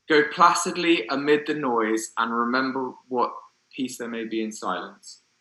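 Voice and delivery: ordinary talk, nothing marked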